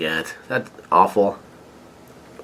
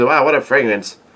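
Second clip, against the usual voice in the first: usual speaking voice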